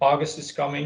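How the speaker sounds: ordinary delivery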